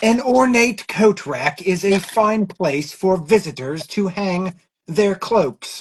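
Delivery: wildlife documentary narrator voice. Speaker reads out a line in a put-on voice: National Geographic voice. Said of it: "That's my National Geographic voice".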